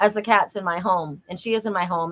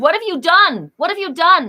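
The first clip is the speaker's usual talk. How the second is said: mock crying, much higher and louder. Retelling Troy at the kitchen table early in the morning, imitating Troy crying. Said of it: "he's crying".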